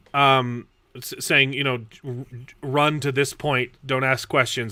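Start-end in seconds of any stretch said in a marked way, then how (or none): none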